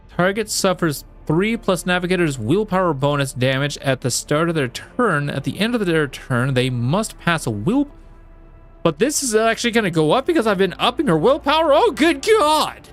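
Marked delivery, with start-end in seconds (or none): 11.8-12.8 very high, shrill screamed outburst. Reading out an ability's stats, the speaker suddenly exclaims, screaming into the mic. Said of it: "I'm screaming into the mic".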